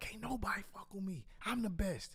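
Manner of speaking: play-acted light half-shout, top-of-lungs style. Retelling a night of yelling alone in the car: retelling a yell. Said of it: "I'm just yelling in, in, like, the top of my lungs".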